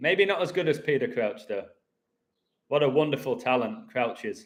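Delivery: ironic, insincere, sarcastic tone, not meaning a word. Praising a player's talent to the guys, in a sarcastic tone. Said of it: "I'm being sarcastic".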